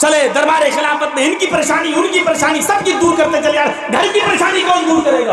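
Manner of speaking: high, shouted, nagging scolding voice.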